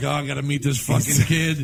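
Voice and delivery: put-on stoned-sounding voice. Imitating Dana Gould from a clip, sounding stoned: stoned Dana Gould impression. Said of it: "He was probably stoned".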